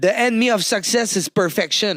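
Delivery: put-on heavy French accent on English. Quoting a girl he taught English, speaking in a heavy accent. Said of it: "avec le plus gros accent".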